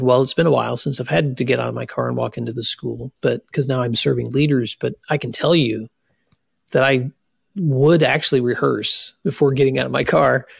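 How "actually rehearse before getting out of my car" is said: ordinary talk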